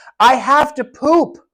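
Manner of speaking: very loud, slow outburst. Describing a client tugging a caregiver's arm in a store, mimicking a very loud voice. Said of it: "says in a very loud voice".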